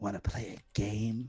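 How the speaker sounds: beast voice, whispering. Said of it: "I'll whisper as the beast".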